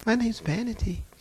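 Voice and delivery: acted-out gentle, meek, sweet and demure voice. Retelling a demon giving its name: imitating a sweet, demure voice. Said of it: "She sounded just as sweet and demure".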